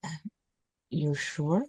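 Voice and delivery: hushed, very soft, barely-there voice. Speaking in character to Lark, asking if they are sure: speaking very softly. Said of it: "very softly".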